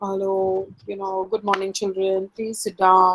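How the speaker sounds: dull, sad voice. A teacher demonstrates greeting a class in a dull, sad voice. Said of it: "My voice is sad".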